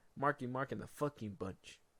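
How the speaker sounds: ordinary talk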